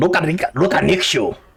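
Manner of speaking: in-character goblin voice. Voicing a goblin knocking at the door: goblin voice. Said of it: "a goblin is knocking at the door".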